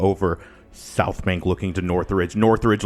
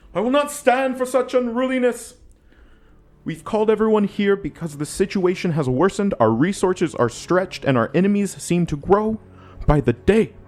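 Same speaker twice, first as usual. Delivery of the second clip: shrill, very high shout; 12 semitones higher than usual. Captain Zhang Peng quiets an unruly crowd from the lectern, yelling. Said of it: "Captain Zhang Peng yells from the lectern".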